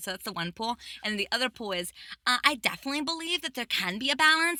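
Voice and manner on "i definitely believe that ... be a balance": put-on Valley Girl accent, pitched up. Describing one view on balance in a put-on Valley Girl accent. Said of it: "I chose to put on the Valley Girl accent".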